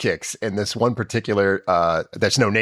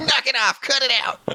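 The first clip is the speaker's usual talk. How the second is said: put-on nerd voice, higher. Quoting a character's lines from an episode: MacGyver's nerd voice. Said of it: "him doing the nerd voice".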